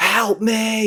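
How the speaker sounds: terrified, very high, blood-curdling screech. Discussing acting, the speaker demonstrates a well-acted scream, blood-curdling screech. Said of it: "a blood blood curdling screech where it's like".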